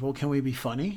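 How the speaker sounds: ordinary talk, nothing marked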